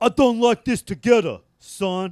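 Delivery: poor, clumsy put-on Italian accent. Quoting Joe Pesci reacting to the torn photo: bad Joe Pesci impression. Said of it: "I can't do a good Italian accent".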